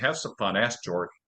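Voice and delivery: ordinary talk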